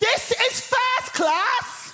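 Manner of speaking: very high, drawn-out, top-of-voice shriek. Retelling a woman in a first class carriage shouting at them, imitating a woman's shout. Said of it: "at the top of her voice, she shouts".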